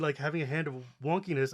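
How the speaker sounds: ordinary talk, nothing marked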